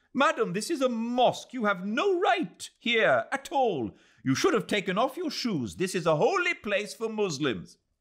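enraged yelling at very high pitch. A man confronts an English woman who walked into the mosque, furiously angry shouting. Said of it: "Suddenly he was furiously angry and shouted".

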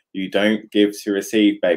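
plain

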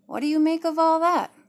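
openly suspicious. Narrator reading one woman asking another for her opinion, suspicious. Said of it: "George asked with suspicion in her tone".

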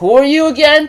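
high, dismissive mocking. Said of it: "And Cinder's like".

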